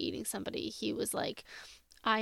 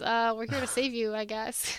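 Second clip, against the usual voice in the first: put-on deflated, no-fanfare, anticlimactic, underwhelming delivery; 4 dB louder than usual. Retelling a scene where Dean kicks in a door: imitating Dean's anticlimactic voice. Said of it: "this very anticlimactic voice".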